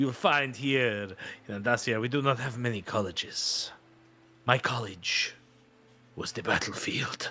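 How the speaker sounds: put-on pirate character voice. Voicing a pirate NPC who greets the party: pirate NPC voice. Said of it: "But it's a pirate bit".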